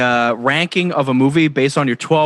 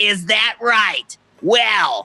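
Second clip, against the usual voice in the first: put-on drunken Boston accent, pitched up; 8 semitones higher than usual. Mocking how a man talks to a kid, imitating a drunken boston guy. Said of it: "he sounds like a drunken Boston guy".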